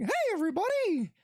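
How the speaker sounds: pitched way up, cartoon-style voice. Retelling answering a Minnie Mouse impression with a Mickey Mouse voice. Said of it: "I can also do freaking Mickey Mouse".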